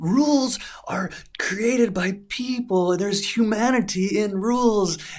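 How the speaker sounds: very high, loud, slow going-nuts rant. Retelling arguing with a store manager over a rule: retelling own angry outburst. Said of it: "I start going nuts in very bad Japanese".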